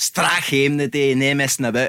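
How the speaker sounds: Scottish accent full of odd, twisty vowels. Imitating the other speaker's accent, quoting a phrase he says: imitating Grado's accent. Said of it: "It's when you say stuff like".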